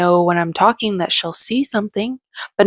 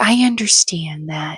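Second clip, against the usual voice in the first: mock calm, gentle, soothing, toned-down tone; 2 semitones lower than usual. Retelling a woman's reply after her tone softened, imitating a soothing voice. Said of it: "it's a more soothing voice".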